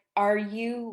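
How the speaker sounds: ordinary talk, nothing marked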